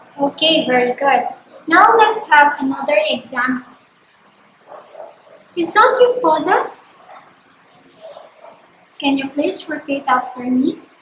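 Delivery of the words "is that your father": pitch climbing in a questioning lilt on father. Giving learners an example question to repeat, rising intonation at end. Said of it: "the tone of my voice rises at the end".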